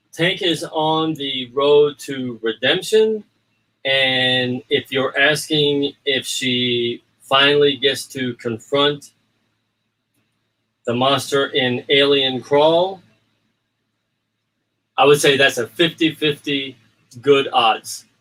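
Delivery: slow deliberate pace. Answering a fan group's question for their translator: speaking slower. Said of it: "they asked me to speak a little slower".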